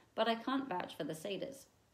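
ordinary delivery, nothing marked

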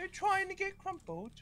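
very high, squeaky put-on voice. Imagining how Rated would say 'crumpled', high-pitched Rated impression. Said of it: "I don't know why I gave him a high pitched voice".

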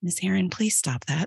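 put-on very calm, even voice. Retelling what a student said on a slide: imitating someone speaking very calmly. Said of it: "Like, so calm".

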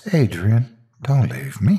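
gentle, tender, high pleading. A woman stirring awake as he heads for the door: tender pleading. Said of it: "she pleaded".

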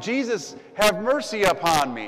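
very slow, long, drawn-out loud crying out. Telling the story of a beggar calling out to Jesus: retelling a beggar's yell. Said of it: "he just starts yelling".

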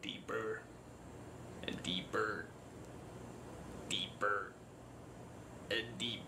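very deep, breathy, hushed whisper. Joking that an unscary movie deepens the voice, in a very deep voice. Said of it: "it just deepens my voice".

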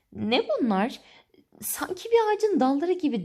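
high, astonished, amazed exclamation. Lucy feels something rough and prickly touch her hands and face: crying out in amazement. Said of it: "diye hayretle bağırdı Lucy".

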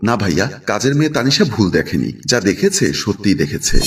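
plain

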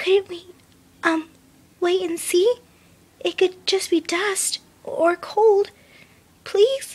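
very high, hushed, timid, pleading half-whisper. Narrator reads Fluttershy's line in an enclosed space, as a half-whisper. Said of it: "Fluttershy's whisper carried well enough".

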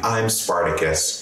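ordinary talk

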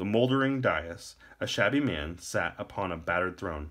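plain reading voice

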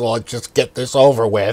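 glum, thoroughly depressed cartoon character voice. Retelling a SpongeBob episode to a listener: Squidward voice. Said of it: "You did that voice very good".

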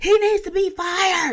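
put-on high-pitched, loud, slow little boy's full-lunged yell.

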